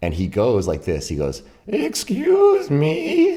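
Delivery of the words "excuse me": very high-pitched, loud frog-person creature voice. Retelling what a man at the door said, frog-person voice. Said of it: "like a frog person would".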